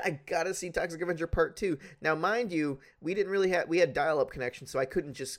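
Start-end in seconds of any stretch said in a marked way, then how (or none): none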